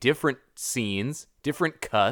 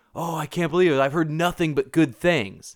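mock yelling, pitched higher; 4 semitones higher than usual. Retelling how a younger guest yelled as the movie started, retelling a yell. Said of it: "he yelled at me like".

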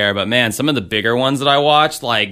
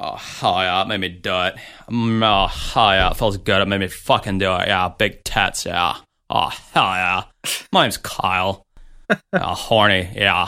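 dim-witted, stupid cartoon dude voice, played dumb; 3 semitones lower than usual. The speaker performs a character they created long ago, in a dumb Kyle character voice. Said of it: "That's a character I created... almost like a butthead type character".

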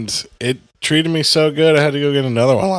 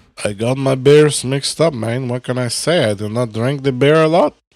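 fake Spanish-accented voice. Talking with a friend about beers he mixed up, the speaker keeps doing a spanish accent. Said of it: "Why are you still doing a Spanish accent?".

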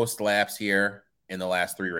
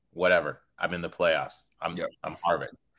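put-on cocky racer voice, pitched lower; 3 semitones lower than usual. Acting out a racer's reply to doubters: speaking as Kevin Harvick. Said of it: "Just the way you said that".

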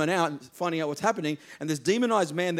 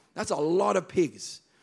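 usual speaking voice

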